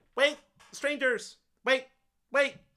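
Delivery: very high, tiny, squeaky gnome voice. Storyteller voices a gnome calling to the group from behind, in a tiny squeaky gnome voice. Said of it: "tiny squeaky voice behind you kind of going".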